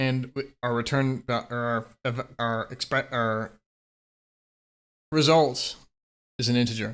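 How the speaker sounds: very slow stammering with stumbling self-correction. Teaching a coding lesson, stuttering and correcting mid-sentence. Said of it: "I'm stuttering because I'm trying to correct myself".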